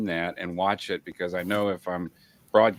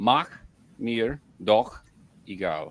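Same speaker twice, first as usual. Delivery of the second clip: German phrase drawn out slowly word by word. Teaching listeners how to say a german phrase, slowed down. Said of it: "slowing it down".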